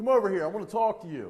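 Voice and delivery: authoritative, commanding voice. Explaining probable cause, the speaker demonstrates calling out to a suspect: authoritative voice. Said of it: "in an authoritative voice".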